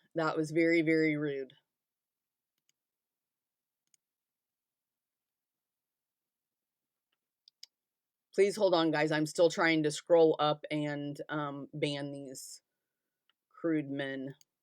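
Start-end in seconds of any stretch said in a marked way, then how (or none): 0.2-9.1 upset, emotional, shaken voice. Apologizing to viewers for rude comments on the channel, emotional and shaken. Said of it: "that's got me very emotional right now".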